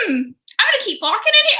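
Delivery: put-on calm, completely unfazed, high sing-song musing. Retelling a scene where Wanda walks into a strange basement: unbothered Wanda impression. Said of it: "she doesn't change her facial expression".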